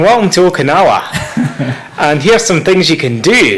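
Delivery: full-strength Scottish accent. A Scottish speaker shows how he'd sound welcoming visitors to Okinawa, full Scottish accent. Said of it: "I've been toning down my accent a wee bit, but uh, if I go around speaking like this".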